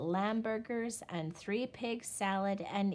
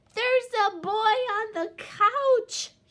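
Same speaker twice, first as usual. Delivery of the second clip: very loud, long, drawn-out, high wailing howl; 12 semitones higher, 10 dB louder than usual. In a story, the son calls out to his parents, howling. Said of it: "he howled".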